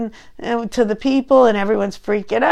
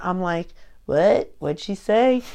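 ordinary talk, nothing marked

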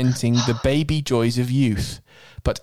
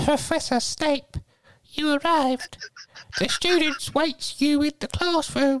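put-on very high, generic kids-show voice, pitched way up, childlike; 3 dB quieter than usual. Committing to the part, greeting the arriving professor in a Teletubby voice. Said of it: "one generic Teletubby voice for all Teletubbies".

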